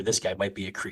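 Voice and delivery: ordinary talk, nothing marked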